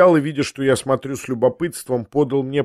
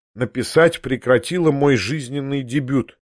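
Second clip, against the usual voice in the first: plain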